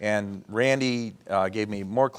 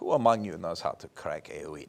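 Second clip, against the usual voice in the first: put-on frightening, scary, menacing German accent; 4 semitones lower, 5 dB quieter than usual. Retelling what a director asked the extras, scary German accent. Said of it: "in that scary German accent".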